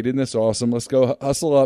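ordinary talk

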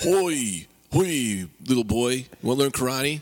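playful martial-arts teacher voice. Introducing a friend to the others, the speaker plays him in a Master Lee character voice. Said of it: "his name is master lee".

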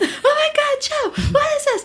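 shrill, very high, drawn-out shriek. Retelling walking into the guest bathroom, she reenacts her own screaming. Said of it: "basically I started screaming".

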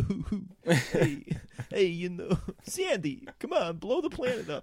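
very high star voice, swooping wildly. Mocking an actor's alien role: John Travolta impression as alien. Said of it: "he's still Travolta. He's like an alien. He's like".

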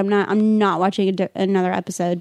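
ordinary delivery

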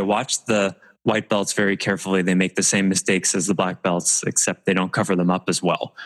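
usual speaking voice

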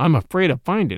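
ordinary delivery

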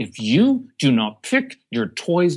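high, menacing voice. Contrasting ways a parent talks to a child: imitating a threatening tone. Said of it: "the threatening".

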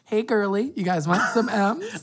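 high motherly voice. Retelling how the mom in class offered candy: imitating the mom in class. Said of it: "who was like".

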